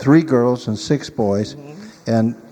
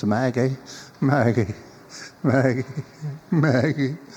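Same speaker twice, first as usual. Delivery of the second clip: frail, faint, soft, weak calling voice; 5 dB quieter than usual. Telling a story, speaker voices a man calling his wife to his bedside: mimicking a feeble voice. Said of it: "in his feeble voice".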